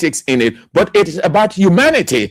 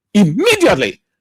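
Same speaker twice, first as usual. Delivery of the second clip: immediately stressed hard as the key word. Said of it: "Underline the word immediately".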